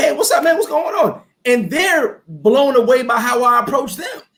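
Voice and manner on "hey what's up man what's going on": high, friendly upbeat tone. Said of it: "I'm like".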